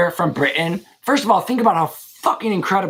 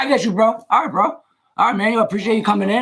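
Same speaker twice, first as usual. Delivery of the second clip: put-on American accent; 4 semitones higher than usual. Trading slang phrases, saying one in the other accent: American accent. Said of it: "so in the American accent".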